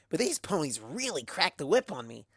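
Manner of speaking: ordinary delivery, nothing marked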